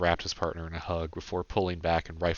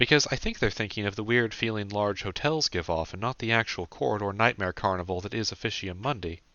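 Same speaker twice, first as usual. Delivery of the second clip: ordinary delivery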